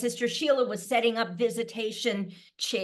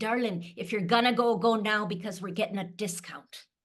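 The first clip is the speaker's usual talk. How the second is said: joking put-on Irish accent, best attempt. Calling the immediate family as a joke, the speaker uses an irish accent. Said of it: "in my best Irish accent".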